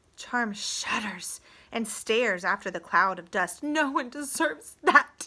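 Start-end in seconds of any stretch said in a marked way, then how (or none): 3.7-5.3 small, fierce, high-pitched protesting voice. Charm, shuddering as she stares after the dust cloud, in a fierce little voice. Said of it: "she says in a fierce little voice".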